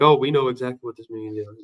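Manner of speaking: ordinary talk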